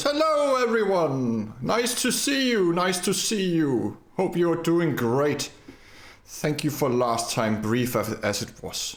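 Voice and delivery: very high, big, swooping, booming voice. The narrator voices Damien arriving and greeting everyone, in Damien's booming voice. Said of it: "with his usually like usual booming voice".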